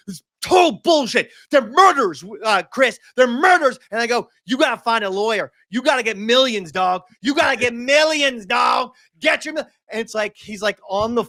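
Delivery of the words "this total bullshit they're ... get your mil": put-on yelling, higher pitch. Retelling a phone call about the power company: imitating own past yelling. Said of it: "nurses were hearing me yell".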